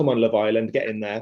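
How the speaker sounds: mock-shouted, loud. Wrestler recalling a match, retelling how the opponent shouted during the ring entrance. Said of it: "he just shouts".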